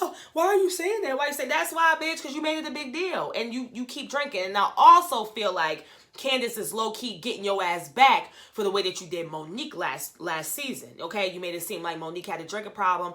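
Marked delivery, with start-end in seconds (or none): 0.0-1.5 high, fake-surprised, wide-eyed protesting tone. Retelling how Ashley reacted, imitating Ashley acting surprised. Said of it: "acting all surprised".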